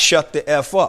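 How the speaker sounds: ordinary talk, nothing marked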